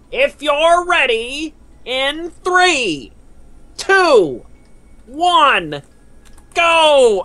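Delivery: very high, animated, swooping, sing-song cartoon voice. Counting down for chat, done in the Squidward voice. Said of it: "I'm going to do it in the Squidward voice".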